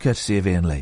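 toned-down, gentler, eased-off tone. Teaching someone a sign-off line, said in a softer voice. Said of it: "and then in a softer voice".

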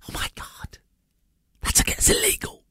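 low, breathy, shocked whisper.

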